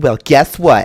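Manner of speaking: put-on high-school girl voice, full of emotion. Showing how a game line could be said: high-school girl with hand on hips. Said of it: "hand on your hips, like you're some, you know, girl in high school".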